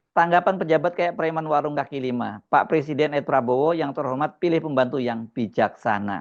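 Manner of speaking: normal talking voice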